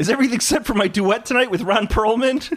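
squeaky, very high felt frog puppet voice. Describing an imagined Muppets sketch, speaking the line in a Kermit the Frog voice. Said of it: "It's too much like my Kermit".

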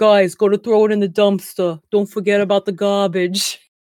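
acted Brooklyn-accented voice. Speaker imitates the game's radio voice telling players to use the dumpster, brooklyn accent. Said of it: "like Brooklyn accent for some reason".

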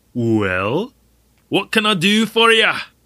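put-on Scottish accent, drawn-out "well". Character answering a visitor; scottish accent. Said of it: "That was Scottish".

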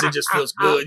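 plain

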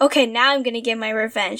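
put-on angry character voice. Recapping Juggernaut coming out of pink portals, mock-angry Juggernaut impression. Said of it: "all angry-like".

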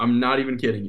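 ordinary delivery

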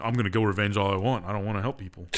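ordinary delivery

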